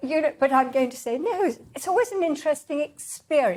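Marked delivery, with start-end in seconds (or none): 1.2-3.6 sarcastically sweet, polite tone. Showing how Brits put others down without it being noticed: sarcastic. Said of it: "I'm being sarcastic".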